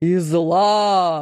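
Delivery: ordinary delivery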